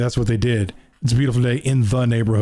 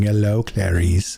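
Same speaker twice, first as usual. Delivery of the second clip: put-on creepy voice, pitched lower; 3 semitones lower than usual. Recalling how he greeted Clarice, the speaker is imitating a creepy voice. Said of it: "I remember him like creepily going".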